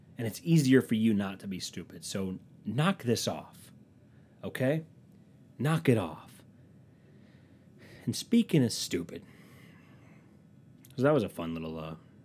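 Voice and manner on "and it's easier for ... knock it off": ordinary talk, nothing marked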